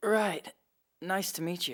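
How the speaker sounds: downcast voice. Introduced at a friend's family temple, the guest replies in a gloomy tone. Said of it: "get rid of that gloomy tone in your voice".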